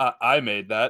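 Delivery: mildly bragging, proud, puffed-up, boastful. Voicing a character who puffs up about a tower they made: puffed up with pride. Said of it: "just gonna kinda puff up a little bit".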